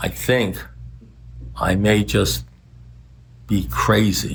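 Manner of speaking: low, whispered male voice. Retelling Tommy's words to Russell, as if someone is listening in, whispering as Tommy. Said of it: "And then he like whispers, like somebody's listening in".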